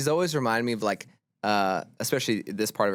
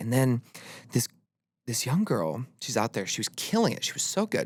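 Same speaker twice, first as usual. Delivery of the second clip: lovely, warm mother-like voice. Retelling what their mom said about a night at the Opry: imitating mom's voice. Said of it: "I love your mom voice".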